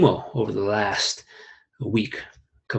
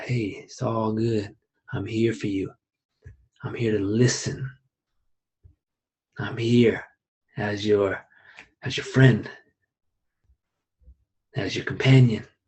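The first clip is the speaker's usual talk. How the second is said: soft and low, much slower. Showing how to talk to a friend who's freaking out, soft, lower tones. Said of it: "I speak softer and I speak in these lower tones".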